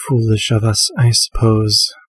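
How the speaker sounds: muttered quietly under her breath. A character glances at the party member beside her and speaks under her breath. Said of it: "under her breath".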